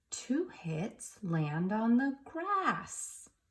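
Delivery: excited read-aloud voice, swooping and slowly drawn out. Speaker reads a practice sentence ending in an exclamation mark, in an excited voice. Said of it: "we're going to use an excited voice for the sentence".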